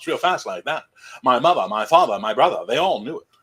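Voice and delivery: put-on transatlantic mid-Atlantic accent. Offering to show the accent anytime, the speaker talks in a mid-Atlantic accent. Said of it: "that's your mid Atlantic".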